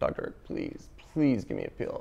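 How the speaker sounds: mock very hushed, breathy, tearful whispered begging. Retelling begging a doctor for a pill, the speaker acts out crying. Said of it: "So I start crying".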